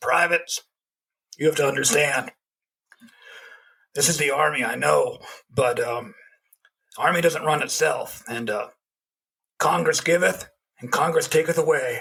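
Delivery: gravelly, raspy voice of an aged army sergeant. Retelling what a man told the privates, in a gravelly old voice. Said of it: "comes up in this gravelly old voice".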